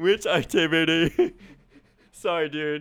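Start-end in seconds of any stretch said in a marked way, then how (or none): 0.0-1.3 very loud, mangled, mocking botched reading. Teasing a person present who butchered a word, mocking imitation of someone's reading. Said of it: "I'm totally making fun of you".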